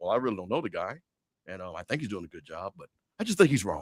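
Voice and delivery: very low, subdued, hushed indoor voice. Talking to Mike about a commentator, the speaker acts out Stephen A. Smith's soft inside voice. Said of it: "why you got this inside voice".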